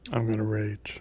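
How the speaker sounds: flat, unenthusiastic delivery. Player announcing a rage on their turn in a tabletop game, flat and unenthusiastic. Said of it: "Can you sound a little more enthusiastic?".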